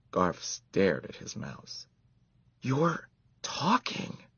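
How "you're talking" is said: awestruck, astonished whisper, pitched very high. Garf speaks to his mouse Ralph, who has just talked to him, in an astonished whisper. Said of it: "he said in an astonished whisper".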